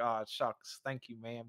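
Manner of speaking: play-acted, choked-up, emotional, folksy aw-shucks cowboy voice. Retelling how an interviewed actor thanked her after getting choked up: imitating someone choked up. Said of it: "got choked up for a sec".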